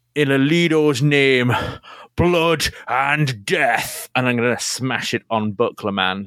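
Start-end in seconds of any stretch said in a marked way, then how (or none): 0.1-4.1 slow, deliberate, drawn-out battle cry. A player's blacksmith character raises his hammer in the air, shouted battle cry. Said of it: "he raises his hammer in the air and shouts".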